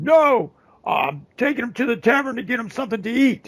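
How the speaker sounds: high-pitched yelling. A storyteller voices the man with the goats answering the woman: yelling back. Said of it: "the guy with the goats is yelling back".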